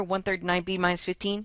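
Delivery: very fast, words run together as one chunk. Explaining the terms of an equation, the speaker reads one term out: said really fast. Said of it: "gotta say it real fast like that".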